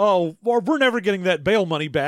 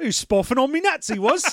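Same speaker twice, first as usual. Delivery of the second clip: put-on British accent; 6 semitones higher than usual. Repeating a phrase that sounds so british: put-on british accent. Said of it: "I did some British voice".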